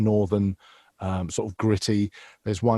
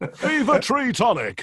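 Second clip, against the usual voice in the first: put-on well-spoken man voice, higher. Imitating how a voiceover artist talks when you meet him: well-spoken put-on voice. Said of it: "in conversation exactly like that?".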